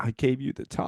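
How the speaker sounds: put-on crying voice. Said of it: "So she's crying there going".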